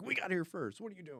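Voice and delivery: confrontational, demanding tone. Retelling a crowd story, imitating an aggressive audience member. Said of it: "this one aggressive, like, audience member".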